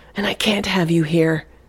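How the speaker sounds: plain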